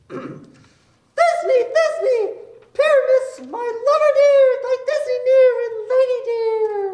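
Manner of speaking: very high, tiny, squeezed monstrous voice. Rehearsing a play, an actor asks to play Thisbe in a monstrous little voice. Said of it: "I shall speak in a monstrous little voice".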